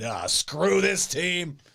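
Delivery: drawn-out, fed-up, dismissive tone. Mocking how fans react once games start: imitating a fed-up Bears fan. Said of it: "Then about a week after actual football is played".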